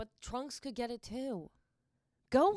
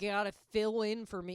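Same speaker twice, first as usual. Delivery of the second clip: ordinary talk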